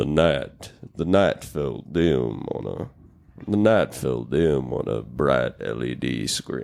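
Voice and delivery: low, slow, rumbling, rough narrator voice. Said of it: "He has the best voice ever".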